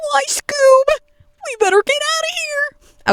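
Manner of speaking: very high, put-on cartoon-style voice. Imagining the cartoon in 3D, doing Shaggy's reaction as a Shaggy impression. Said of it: "that was a little bit better".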